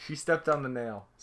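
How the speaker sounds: ordinary talk, nothing marked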